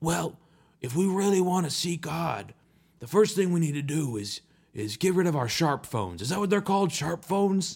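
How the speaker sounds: imitated raspy old voice. Retelling an older speaker's podcast remark: imitating a raspy old voice. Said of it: "this really, really raspy voice".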